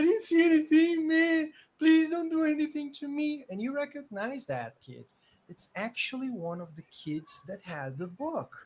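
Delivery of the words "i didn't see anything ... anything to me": very high, loud, tearful sobbing and begging. Voicing a kid held up by an angry man: crying and pleading. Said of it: "just crying, saying".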